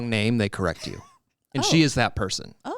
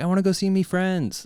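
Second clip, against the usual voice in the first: put-on small child's voice, pitched higher; 5 semitones higher than usual. Retelling how one of the kids asks to go to church, imitating Lou. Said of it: "That's how she says it".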